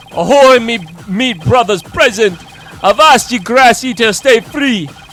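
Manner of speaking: put-on loud, high Jamaican accent. Voicing a character, giving him a Jamaican accent. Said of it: "I gave him a fucking Jamaican accent".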